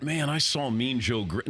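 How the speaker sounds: ordinary talk, nothing marked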